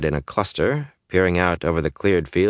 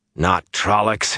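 disgusted growl, higher; 2 semitones higher than usual. Perrin calls out after spotting someone behind a distant wall, disgusted growl. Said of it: "he growled disgustedly".

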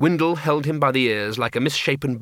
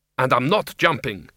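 usual speaking voice

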